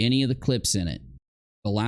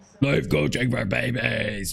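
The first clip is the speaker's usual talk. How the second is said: eerie, rough, creaky possessed-sounding voice. Mimicking how a woman said a phrase, mock possessed deep voice. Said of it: "I'm possessed".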